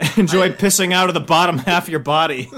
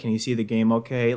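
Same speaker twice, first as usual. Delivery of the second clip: put-on lifeless tone, lower, quieter; 5 semitones lower, 5 dB quieter than usual. Retelling what a woman said to him while basketball was on, mock bored, lifeless tone. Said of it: "Like in that tone, like she's lost the will to live".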